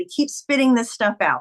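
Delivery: ordinary talk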